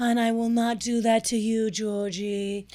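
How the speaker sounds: dramatic, very slow, drawn-out delivery. Retelling a dating show guy watching ducks: imitating Connor's dramatic talk. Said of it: "and he's like".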